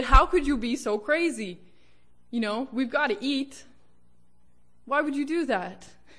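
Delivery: high sneering scorn. Retelling how a younger brother scoffed at his brother turning down a job, retelling a sneer. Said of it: "he sneered at his brother".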